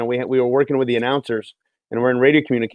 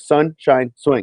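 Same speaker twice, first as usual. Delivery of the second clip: slow, enunciated, syllable-by-syllable hockey announcer delivery. Recalling saying it phonetically like a hockey announcer, slow careful enunciation. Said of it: "I had to slow down and, like, just enunciate it like I'm announcing a hockey game".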